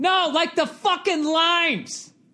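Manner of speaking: put-on very high, dragged-out shout. Retelling asking a store clerk for key limes: imitating himself yelling. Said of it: "I don't understand why you're yelling".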